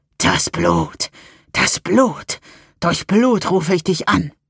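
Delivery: sinister, slow, swooping, dark hissing voice. A dark voice inside the narrator's skull speaks: dark hiss. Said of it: "Eine finstere Stimme in meinem Schädel fauchte".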